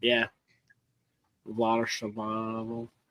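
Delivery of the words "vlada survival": low, slow, quiet mumble under the breath. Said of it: "Yeah, just mumble it".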